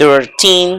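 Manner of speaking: put-on "thirteen" with heavy stress on last syllable -teen. Counting thirteen to nineteen in English: strong stress on teen in thirteen. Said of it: "el acento recae acá en la palabra teen. ¿Sí? Entonces hay que hacer más fuerza ahí".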